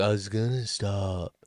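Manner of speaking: put-on soft, slow, laid-back Southern California young bro drawl. Describing their teenage son, the speaker quotes him: imitating a chill Southern California bro. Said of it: "he's very chill".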